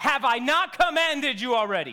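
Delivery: booming voice, as if from heaven above. Picturing God commanding like a parent, in a booming voice from heaven. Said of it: "Booming voice from heaven".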